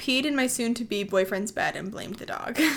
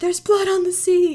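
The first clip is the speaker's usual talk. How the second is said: abrupt, alarmed, shrill, loud, sudden scream; 7 semitones higher, 7 dB louder than usual. Telling a middle school story, acting out someone in class screaming. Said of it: "someone screamed".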